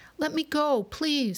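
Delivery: high, squeaky little mouse voice. A mouse grabbed by a lion that has just woken pleads, squeaking. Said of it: "squeaked the mouse".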